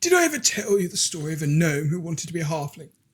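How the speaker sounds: hushed whisper. In a role-play scene, turning aside to another character: whispering. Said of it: "I sort of whisper".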